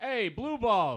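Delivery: very loud, high yell. In an improvised scene, a character calls to another from across the bar, yelling. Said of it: "Do you two have to yell from across the bar?".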